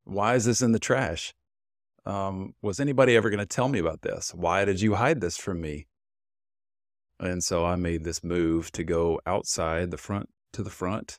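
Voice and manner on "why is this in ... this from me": ordinary talk, nothing marked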